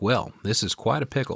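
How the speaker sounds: put-on, cute, light Southern American accent. Recapping a show, quoting the boss reacting to a news report, Crystal's cute Southern accent. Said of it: "She's got a cute little Southern accent going on".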